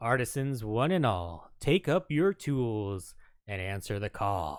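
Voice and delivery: super serious voice. Reading an in-game update aloud: super serious voice. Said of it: "super serious voice for that one".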